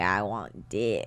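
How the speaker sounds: scratchy, creaking vocal fry voice. Demonstrating vocal fry in a talk about scratchy voices, vocal fry. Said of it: "let their voices scratch. Like".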